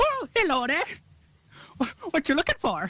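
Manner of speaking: very high, sing-song, swooping character voice. Voicing an alchemist who looks up as a customer walks in: voicing the alchemist. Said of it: "he looks up at you and goes".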